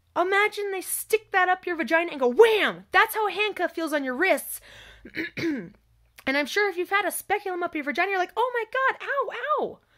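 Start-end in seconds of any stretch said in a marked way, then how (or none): 8.4-9.8 high, drawn-out, pained ow-ow yelps. Describing a painful exam to listeners, the speaker acts out someone in pain. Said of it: "Because it hurts".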